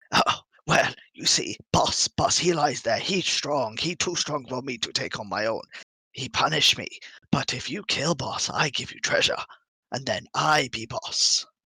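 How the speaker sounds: put-on goblin creature voice. Narrating a scene, the speaker speaks as a goblin who stops the listener; goblin voice. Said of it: "you see a goblin who".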